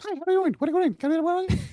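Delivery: very high, fast, rattled-off squeaky chipmunk voice. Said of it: "You hear myself in a high pitched voice".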